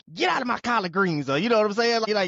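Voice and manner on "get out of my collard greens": put-on old folks' scolding old-timer voice. Retelling shooing a daughter from the kitchen, imitating old folks scolding. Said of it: "it reminded me of, like, y-, them old folks".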